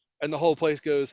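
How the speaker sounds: normal talking voice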